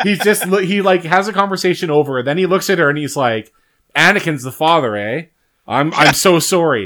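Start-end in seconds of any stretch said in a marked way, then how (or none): 3.9-6.9 mock slow, hollow, insincere delivery. Retelling the film scene where Obi-Wan comments on Padme's pregnancy: insincere Obi-Wan apology. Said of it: "it doesn't sound really sincere".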